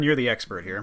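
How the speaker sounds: ordinary delivery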